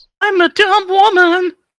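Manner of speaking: very high-pitched, loud, ditzy cartoon girl voice. Showing the others your take on the character from the episode, do an Amy impression. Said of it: "You guys want to hear my Amy impression?".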